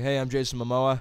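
plain regular American voice. Imitating an actor walking into an audition: Jason Momoa impression. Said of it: "he walked in, he was like".

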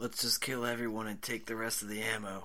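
rushed, hushed, secretive half-whisper. A game player's character speaks quietly to the priest, half-whispering. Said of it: "So I whisper to the priest".

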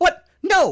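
high, angry, blurted outburst. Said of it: "Goldblum kinda gets mad".

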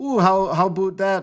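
full-on East Coast Canadian accent, laid on thick. Explaining that a Canadian accent is really East Coast: imitating East Coast Canadian accent. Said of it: "just an East Coast accent, like the full-on".

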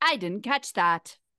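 annoying phone assistant voice. Comparing Siri to a booming, comforting voice, doing a Siri voice impression. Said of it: "That was actually a really good Siri voice".

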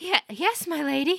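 croaking voice. Narrator reads a woman answering the lady who recognized her, croaking. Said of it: "she croaked".

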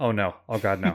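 muttered, dismayed and dreading. Retelling own reaction while watching a film in the theater: imitating muttering under breath. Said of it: "I'm saying it under my breath".

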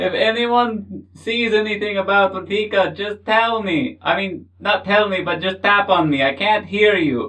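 loud, high-pitched shouting yell. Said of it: "why are they yelling?".

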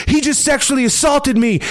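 put-on, shrill, very high shrieking scream. Describing a video, acting out the woman in it, imitating a woman screaming. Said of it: "and just screaming".

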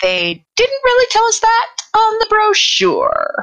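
very high, sing-song, swooping thief character voice. A player responds in character to talk of invading horrors: windling thief character voice. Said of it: "[name], the Windling Thief: [name]".

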